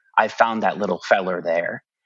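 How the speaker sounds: ordinary talk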